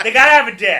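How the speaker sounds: very loud, high-pitched blurted-out line. Answering what makes a woman attractive: Jim Norton impression. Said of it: "that was my Jim Norton impression".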